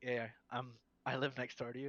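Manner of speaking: ordinary talk, nothing marked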